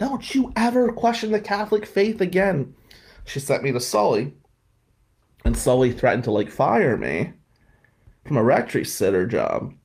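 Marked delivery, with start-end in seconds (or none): 0.0-2.7 very high, screaming voice. Quoting a woman who screamed at the speaker; imitating someone screaming. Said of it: "she was screaming at me".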